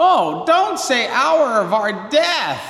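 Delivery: sudden, high-pitched, drawn-out interrupting yell. Retelling how a woman interrupted the last part of the Hail Mary, imitating someone yelling. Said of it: "she yells".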